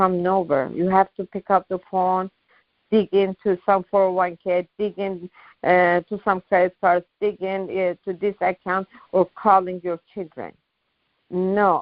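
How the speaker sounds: usual speaking voice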